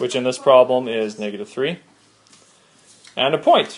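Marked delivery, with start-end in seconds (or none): 3.2-3.8 cracking voice, higher pitch. Explaining slope point form to listeners: voice cracking. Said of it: "As my voice cracks".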